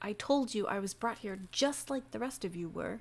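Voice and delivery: half-whispered, hushed, nearly silent. A player voicing a character in a tabletop game, half-whispering. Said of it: "he whispers".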